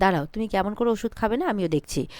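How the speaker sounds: ordinary talk, nothing marked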